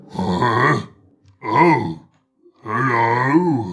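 growly, growling yeti beast voice. Voicing a Yeti on a bridge greeted by a player: Yeti voice. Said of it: "You see this Yeti and, like, standing over, growling".

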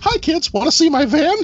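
high-pitched, creepy squeaking voice. Joking about a voice to avoid: creepy Mickey Mouse voice. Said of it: "sounding like a creepy Mickey Mouse".

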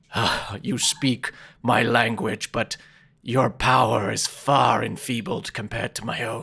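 speaking in a dragon voice. Game master voicing the dragon as it answers a player, dragon's voice. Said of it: "you see the dragon look at you and say".

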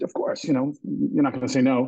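usual speaking voice

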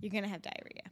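plain, simple, matter-of-fact delivery. Retelling a friend's friend's reply about food on a trip: imitating a matter-of-fact tone. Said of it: "She said it so, like, matter-of-factly".

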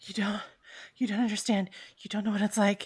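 breathless character voice. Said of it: "he's panting at this point".

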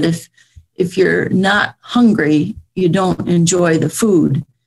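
normal talking voice

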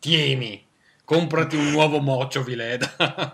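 acted-out loud, drawn-out, scornful, disdainful tone. Acting out someone handing money to the cleaner, with mock contempt. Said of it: "lascia giù 50 euro così con disprezzo".

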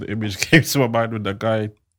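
giggly speech broken by laughter.

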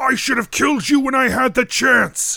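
very high-pitched, furious, roaring bellow. A man on top of a stone pillar shouts down at you, bellowing. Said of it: "He bellows out at you".

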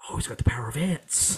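close, whispered aside into an ear. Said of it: "he just whispers into our ear".

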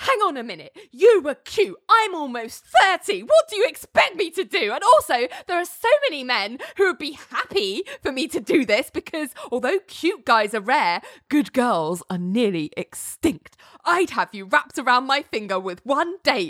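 play-acted, high-pitched, all-defensive outburst. Retelling how Ali answers a threat to call police: imitating someone getting defensive. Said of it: "Ali gets all defensive".

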